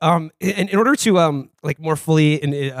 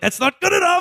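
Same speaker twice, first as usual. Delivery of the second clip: acted furious, pitched-up, tearing-into voice. Retelling the leader punching a table: imitating an angry rant. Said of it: "he punches a table and he's like".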